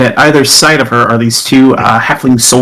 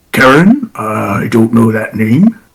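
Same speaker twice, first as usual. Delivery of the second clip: growly fantasy orc creature voice. Narrating a tabletop scene, voicing a stranger in the mist answering, orcish voice. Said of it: "kind of this orcish voice".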